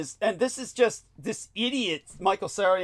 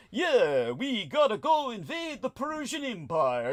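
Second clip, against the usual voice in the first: slow, drawled Italian accent; 3 semitones higher, 6 dB quieter than usual. Arguing Roman nobles on screen should sound Italian, not British, as Caesar with an Italian accent. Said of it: "they would be talking like like this".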